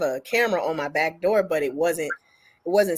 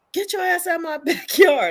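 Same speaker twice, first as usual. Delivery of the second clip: shrill, very high shouted yell; 12 semitones higher, 4 dB louder than usual. Retelling yelling through the window at a man in the backyard: retelling a yell. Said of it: "I'm yelling through the window".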